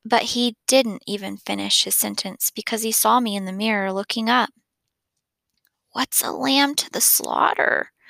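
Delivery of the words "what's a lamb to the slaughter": drowsy, sleepy, half awake, higher and slower. Augie, woken up, asks his dad a question, sleepily. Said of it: "I asked sleepily".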